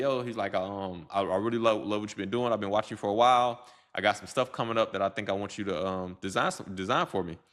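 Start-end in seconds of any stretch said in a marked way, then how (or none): none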